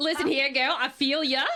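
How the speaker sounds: put-on Australian accent. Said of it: "faking Aussie accents at the bar".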